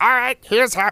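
very high-pitched, sketchy cartoon character voice. Explaining a scene for the audience, doing a King Kai impression. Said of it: "I can't do a great King Kai impression".

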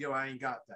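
put-on cool and calm voice. Retelling a robbery, the one held at gunpoint answering: imitating someone cool and calm. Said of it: "he's just so cool and calm about it".

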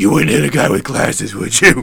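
very loud, rasping, gravelly caped-hero voice. Joking that every character should talk in the voice: Batman voice. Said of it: "I want all the characters to have that voice".

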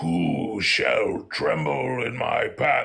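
rough, creaky, slow, loud, aggressive dragon voice. Speaker shows how they voice angry dragons: deep angry dragon voice. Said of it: "And I make their voice, like, deep".

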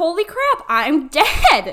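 panicked outburst, dragged out very slowly. Imagining realizing they are dead, acting out freaking out. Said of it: "I'd be freaking out".

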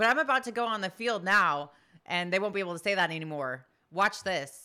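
usual speaking voice

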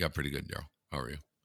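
very low, low-key, deadpan, showing no emotion. Greeting a caller as a coach: Dave Tippett impression. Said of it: "That's a good impression of Dave Tippett".

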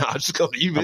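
high dog voice, brushing off. Retelling how the dog ignored the lady at the counter: voicing the dog Comet. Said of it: "and he's like".

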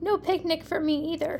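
plain reading voice

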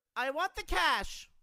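very high, very loud shouting yell. A coached robber, told to be louder, demands cash from a woman with a louder shout.

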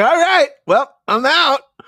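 mock high, loud, bored and casual delivery.

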